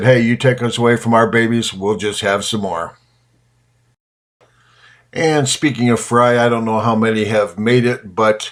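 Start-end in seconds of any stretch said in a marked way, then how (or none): none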